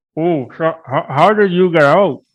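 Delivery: high, slow speech through a mouthful of food. Speaker recounts asking a coworker a question while eating; mimicking talking with mouth full. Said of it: "kind of with my mouth full".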